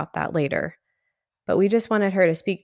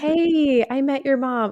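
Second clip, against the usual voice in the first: high, sweet voice. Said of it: "she would just sweetly be like".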